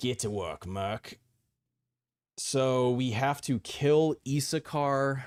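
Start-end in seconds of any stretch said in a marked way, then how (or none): 0.0-1.2 clumsy, badly done, put-on Australian accent. Player reading game dialogue aloud blind, voicing a game character: bad Australian accent. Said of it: "The Aussie accent gets him".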